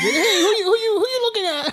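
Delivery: very high, loud, squeaky, confrontational voice. Answering how he talks, imitating with a high-pitched Mike Tyson voice. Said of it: "a high-pitched voice".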